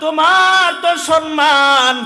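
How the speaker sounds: high, loud calling out.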